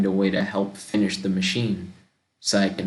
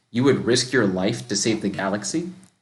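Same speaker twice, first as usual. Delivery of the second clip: normal talking voice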